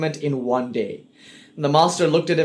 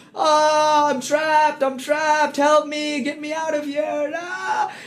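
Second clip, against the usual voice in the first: very high, slow, drawn-out sobbing wail; 11 semitones higher than usual. Retelling a story of a guru holding a tree: imitating a crying guru. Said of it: "he starts to, to cry".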